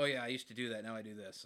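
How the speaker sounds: put-on dismissive manner. Retelling what a grumpy man said about his monster truck: imitating a dismissive tone. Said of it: "he said it in, like, a weirdly, like, dismissive".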